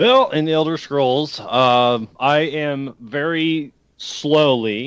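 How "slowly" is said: stressed, drawn-out "slowly", spoken much slower. Answering the host's question about Elder Scrolls, with stress on 'slowly'. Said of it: "I'm going to emphasis on slowly".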